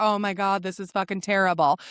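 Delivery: whining in mock self-pity. Imitating her past self while nannying: mock self-pity. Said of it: "So I was very much like".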